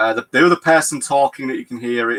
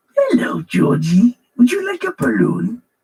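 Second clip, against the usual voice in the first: creepy put-on clown voice; 12 semitones higher than usual. Acting out the scene with Georgie, the speaker does a creepy Pennywise voice. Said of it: "very creepy from the voice".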